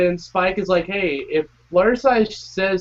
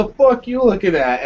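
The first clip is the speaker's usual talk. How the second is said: put-on, angry yell; 2 semitones higher, 4 dB louder than usual. Retelling how Rainbow Dash yells at Pinkie Pie: imitating Rainbow Dash yelling. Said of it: "She's totally yelling at Pinkie Pie".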